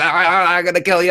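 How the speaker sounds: put-on excited robotic squeak. Describing a comic bit about an overexcited Dalek: squeaky excitable Dalek impression. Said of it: "really excitable high pitched Dalek that just squeaks".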